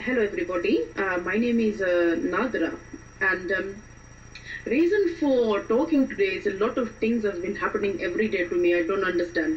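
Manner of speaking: fast put-on Indian accent with halting fillers. An actress demonstrating an accent as a character introducing herself, Indian accent. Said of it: "I am going to do an Indian accent for you".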